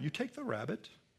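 imitated British accent. Quoting a visiting scientist talking about a rabbit: imitating a British accent. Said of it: "in his British accent".

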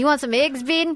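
put-on Australian accent. Quoting a man from a show offering eggs: imitating an australian accent. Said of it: "is he from Australia or from New Zealand?".

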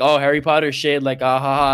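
joking, teasing tone. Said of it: "it's not like Navia when he says".

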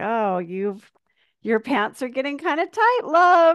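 high, sweet cooing voice. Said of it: "I hear my sweet [name] voice".

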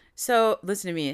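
ordinary delivery

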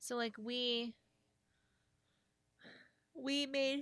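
speaking through a yawn. A tired speaker keeps telling a story while yawning. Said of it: "Excuse me, yawn again".

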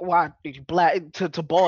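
put-on loud, preacher-style small-town Texas accent. Retelling to friends what a preacher-like man asked you, imitating small-town Texas accent. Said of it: "the accent who was like straight out of small town Texas".

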